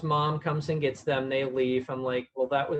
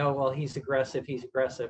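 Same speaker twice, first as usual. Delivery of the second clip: ordinary talk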